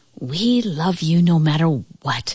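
hushed whisper. Narrating an oak tree speaking to an old house in a story: whispered. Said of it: "whispered the oak tree".

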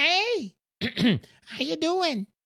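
high, sly, greedy little man voice.

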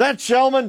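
high, curt, barked. Retelling how a post office worker greeted him: imitating a barked question. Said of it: "the guy just barks like".

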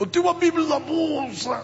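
very high pained moan. A pastor retells lying hurt by a church, answering a man, retelling moaning in pain.

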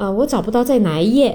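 ordinary delivery

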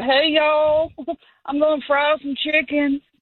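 put-on tipsy voice. Retelling what the brother said: imitating drunk brother. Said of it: "That's my drunk brother voice".

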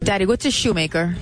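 usual speaking voice

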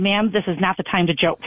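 usual speaking voice

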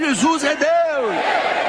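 shouted again.

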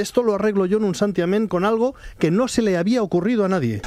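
ordinary delivery

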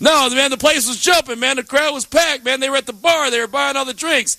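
a high-pitched, insistent, argumentative tone.

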